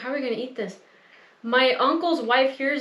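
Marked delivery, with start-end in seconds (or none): 0.0-0.8 put-on whisper, quieter. Retelling a quiet remark to Ron at a relative's table: retelling a whisper. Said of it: "I'm whispering to Ron".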